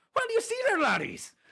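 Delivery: very high, loud put-on Irish leprechaun accent. Asked for a higher-pitched Irish accent like a leprechaun, high-pitched Irish accent. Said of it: "Something like this".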